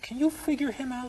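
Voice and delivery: acted-out, very high, confiding conspiratorial tone. Telling a joke, quoting a wife speaking to the marriage counselor, mock-conspiratorial tone. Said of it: "in a conspiratorial tone of voice".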